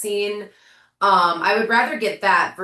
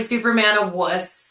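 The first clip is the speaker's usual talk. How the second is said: normal talking voice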